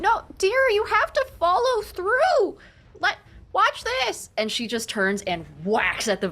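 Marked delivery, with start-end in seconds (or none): 0.0-4.3 very high-pitched, loud yell projected far. Voicing a character calling to an ally across the stage: character yelling. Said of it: "you hear her yell from across the stage".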